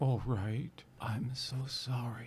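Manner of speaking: soft whisper, right into the ear.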